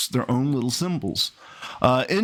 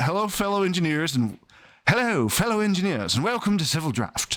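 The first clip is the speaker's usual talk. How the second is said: bad, horrible put-on British accent; 4 semitones higher than usual. Opening the Civil Draft video, greeting fellow engineers in a horrible British impression. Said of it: "that was my horrible British impression".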